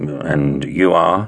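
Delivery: wary, suspicious, distrustful, guarded tone. Carbo, facing a woman with two tough-looking men, asks suspiciously. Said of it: "He asked suspiciously".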